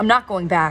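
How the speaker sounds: plain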